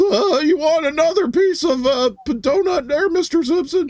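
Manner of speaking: put-on very high cartoon kid voice. Showing how he thinks he sounds on the podcast, in The Simpsons kid voice. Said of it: "I sound like that kid from The Simpsons".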